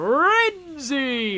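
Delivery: excited, drawn-out game announcer call. Speaker compares the english announcer's call with the japanese dub: imitating an excited announcer. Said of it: "makes it sound like more like excited".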